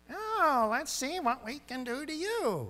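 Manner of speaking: slow, very high storybook witch voice. Showing how a helpful guy does not sound, like a movie minion, Wicked Witch of the West voice. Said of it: "sounds like the Wicked Witch of the West".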